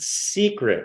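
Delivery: leaning hard on the word "secret". Reading a subscriber's slide aloud to another speaker: stress on SECRET. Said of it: "I'm emphasizing that word".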